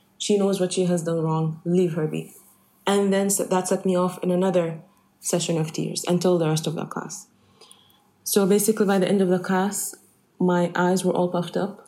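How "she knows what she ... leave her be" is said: normal talking voice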